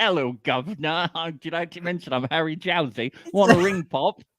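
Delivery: cheeky little fella voice. Imagining a reality star as ship captain: Harry Jowsey impression. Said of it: "And Harry's just like".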